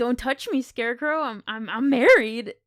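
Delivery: yelled, scolding tone. Recapping a scene, the speaker acts out a woman yelling at a scarecrow: retelling a yell. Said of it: "you just yell at him like".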